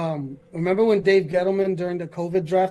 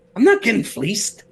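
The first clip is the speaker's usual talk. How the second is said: cartoonish put-on Boston accent, higher and louder; 4 semitones higher, 5 dB louder than usual. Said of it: "that cartoonish Boston accent he be rocking with".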